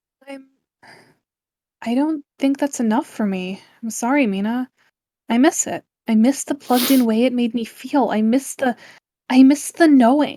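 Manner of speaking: hushed, quiet, soft-spoken. Reading one character's dialogue to another character in a story, in a quiet voice. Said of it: "The same quiet voice".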